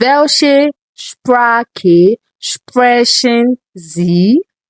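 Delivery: drawn out word by word, very slow, careful German. Teaching a German tongue-twister phrase to learners, said very slow. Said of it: "I'm going to say it as slowly as possible".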